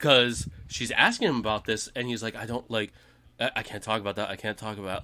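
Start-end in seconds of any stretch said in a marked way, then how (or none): 2.3-5.0 put-on panicked voice, much quieter. Retelling a man dodging a woman's questions, imitating panicked voice. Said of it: "you can hear the panic in his voice".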